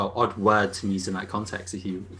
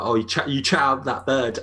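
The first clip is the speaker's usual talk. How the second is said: ordinary delivery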